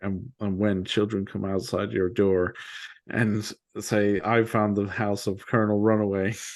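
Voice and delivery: ordinary talk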